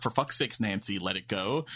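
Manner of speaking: ordinary talk, nothing marked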